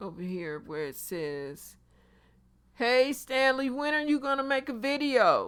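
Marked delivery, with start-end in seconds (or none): 2.7-5.5 put-on loud, high yell, as if calling far. Reading a viewer's comment asking when a video is coming: loud, like yelling across street. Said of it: "I don't know why I got so loud".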